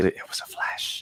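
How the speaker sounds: slow, breathy, ghostly whisper.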